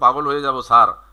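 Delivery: normal talking voice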